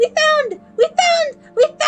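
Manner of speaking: high, thrilled, excited, repeated screaming. Speaker announcing a find to the audience, screaming excitedly. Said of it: "I'm sorry for screaming at you".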